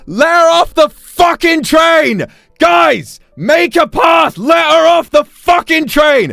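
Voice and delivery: yelling. Retelling shouting at people on a train, re-enacting their own shout. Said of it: "I raised my voice and I shouted".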